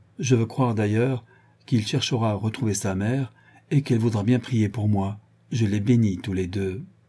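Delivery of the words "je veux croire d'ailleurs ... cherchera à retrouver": ordinary delivery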